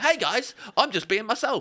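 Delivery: put-on cheery, high child voice.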